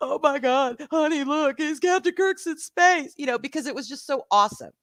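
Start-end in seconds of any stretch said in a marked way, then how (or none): 0.0-3.1 bawling, blubbering, tearful, crying hard. Retelling watching Captain Kirk go into space with her husband, retelling own bawling. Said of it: "I'm sitting there and I'm bawling".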